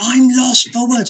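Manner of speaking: very high, full-throated, shrieked shout. Recounting how she shouted her line from the wings, retelling a shout from offstage. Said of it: "shouted the line at the top of her voice".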